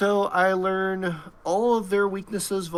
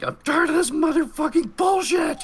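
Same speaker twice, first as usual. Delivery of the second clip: very high, shrill battle yell; 10 semitones higher, 3 dB louder than usual. Acting out a character charging at a cultist: character yelling. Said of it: "she's yelling".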